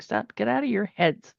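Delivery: ordinary delivery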